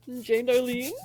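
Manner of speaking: ordinary talk, nothing marked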